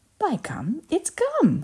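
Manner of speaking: high, very slow, drawn-out thrilled shriek. After a pause, a gum-chewing girl names the invention, shrieking with excitement. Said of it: "she shrieked".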